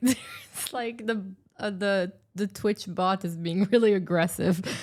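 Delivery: slow talk, words broken up by laughing. Explaining why the Twitch bot's messages are funny: laughing while talking. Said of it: "I'm laughing because".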